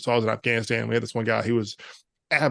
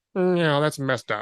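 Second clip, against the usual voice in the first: put-on defeated voice, higher and slower; 4 semitones higher than usual. Retelling how he reacted the morning after the prank, mock-defeated voice. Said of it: "he was so defeated".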